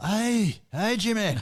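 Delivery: put-on Scottish accent. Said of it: "in faux Scottish accents".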